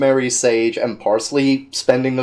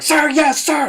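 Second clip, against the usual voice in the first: very high-pitched military recruit voice. Describing a character standing stiffly, imitating a cadet answering a drill sergeant. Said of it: "a cadet in a drill sergeant line".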